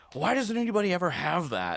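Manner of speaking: put-on upset, put-upon, high, swooping exasperated protest. Retelling a customer's complaint at a bar counter: mock-upset complaint. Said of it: "Why are you acting so upset".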